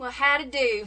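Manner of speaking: Ozark Missouri accent. Host introducing the panel of a show about the Ozarks, in an Ozark Missouri accent. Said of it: "That's how people in the Ozarks talk".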